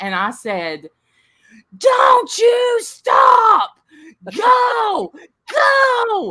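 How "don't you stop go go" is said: very high, very slow, drawn-out cheering yell. Recounting a birth, speaker re-enacts urging the woman in labor; retelling a yell cheering her on. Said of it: "I'm yelling, I'm cheering her on".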